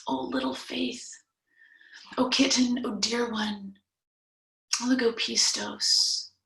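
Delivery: fond, tender, affectionate, endearing tone. Retelling Jesus's words to Peter: imitating an endearing pet-name tone. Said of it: "like an endearment, a little pet name".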